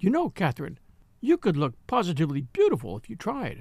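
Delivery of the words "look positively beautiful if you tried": plain reading voice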